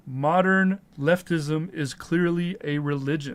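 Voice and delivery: normal talking voice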